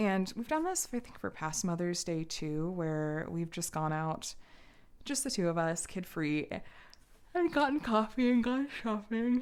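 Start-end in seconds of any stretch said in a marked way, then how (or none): 7.3-9.4 stretched, pitched-up words spoken through a yawn. Mid-story, the speaker apologizes for a yawn: yawning while talking. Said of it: "Excuse me for yawning".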